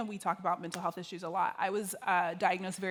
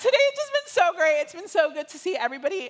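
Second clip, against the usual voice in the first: tearful, breaking voice, very high and loud; 10 semitones higher, 10 dB louder than usual. Thanking friends she can call anytime, crying with her voice breaking. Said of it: "Why am I crying?".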